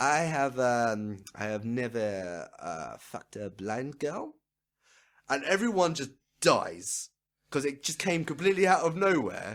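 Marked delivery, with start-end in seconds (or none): 0.0-4.3 put-on heaviest French accent, very slow, drawn right out. Retelling a stranger's sudden remark, in the thickest French accent. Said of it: "in the thickest French accent".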